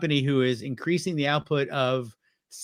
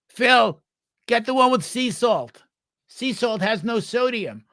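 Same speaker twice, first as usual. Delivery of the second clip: play-acted high, raised yell carrying far; 8 semitones higher, 5 dB louder than usual. Retelling a woman yelling to phil down a shop aisle, imitating a yell down the aisle. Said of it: "she yells down the aisle".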